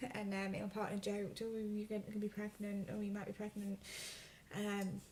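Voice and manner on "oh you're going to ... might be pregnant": plain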